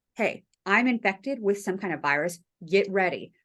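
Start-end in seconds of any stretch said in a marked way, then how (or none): none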